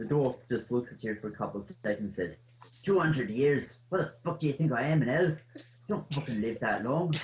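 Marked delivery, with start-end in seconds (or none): 2.8-7.1 put-on, attempted Irish brogue accent. Voicing a dwarf barkeep answering a question: attempted irish accent. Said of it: "I certainly give you A for effort with the Irish accent".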